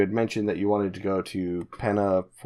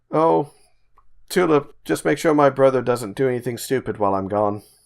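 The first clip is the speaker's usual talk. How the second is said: loud, higher-pitched shouted yell; 6 semitones higher, 5 dB louder than usual. Game master voicing a departing character calling back to tulip: yelling back. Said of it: "He just yells back".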